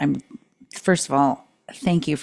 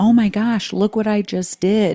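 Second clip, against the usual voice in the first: mock thrilled, eager, pitched-up exclamation; 7 semitones higher than usual. Retelling showing another person what was done, imitating own excited voice. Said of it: "I'm all excited".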